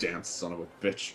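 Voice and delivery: very hushed, frustrated grumble under the breath. Player voicing their character walking off behind the alley: muttered under breath. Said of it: "kind of muttering under my breath".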